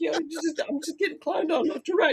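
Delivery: high-pitched, aggrieved, wounded lamenting tone. Retelling what Sean Bean says about his roles, imitating a hurt Sean Bean. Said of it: "He's hurt".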